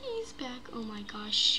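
soft, terrified, frightened whisper.

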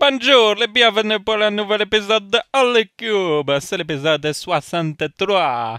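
playful fake Italian accent, loud and high. Opening a podcast episode in French, in a fake Italian accent. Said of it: "je m'amuse à faire cette accent italienne".

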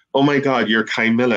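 mock eager, enthusiastic excitement. Retelling an old man who came up to him on the street, retelling an enthusiastic fan. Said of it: "he's really enthusiastic".

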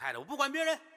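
doting, motherly voice.

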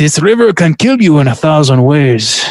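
poorly imitated Portuguese accent. Reading a movie quote aloud: Jon Voight doing a bad Portuguese accent.

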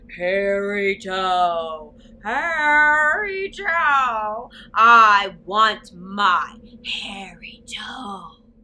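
deep, very loud booming voice. Narrator reads the voice at the old woman's front door: deep booming voice. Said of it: "the deep voice boomed again".

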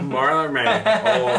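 high, loud put-on voice full of laughter.

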